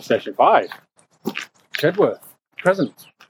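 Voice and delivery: mechanical, machine-like voice. Reading out the next station's name to a companion, in a robotic voice. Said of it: "I purposely did a robotic voice then".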